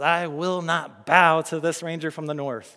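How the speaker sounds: put-on snarl. Retelling a character's answer to news of the ranger Aragorn, retelling a snarled line. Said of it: "he says with a snarl in his voice".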